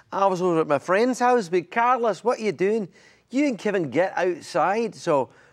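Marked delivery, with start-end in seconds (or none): 1.6-4.9 put-on Glaswegian Scottish accent. Imitating a friend's parent calling the kids outside: glasgow scottish accent. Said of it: "my best friend's parents were from Glasgow, Scotland".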